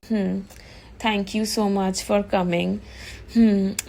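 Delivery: ordinary delivery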